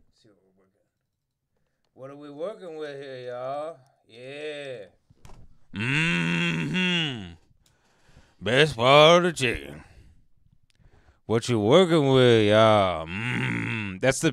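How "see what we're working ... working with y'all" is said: drawn-out, stretched mm-hmm, savoring tone. Reading a food channel suggestion, then doing a Big Country impression. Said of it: "I'm doing the impression of Big Country".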